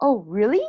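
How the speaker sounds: really said with pitch rising at end. English lesson on asking questions, rising pitch on 'really'. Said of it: "Make sure your voice goes up".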